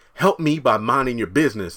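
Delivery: ordinary delivery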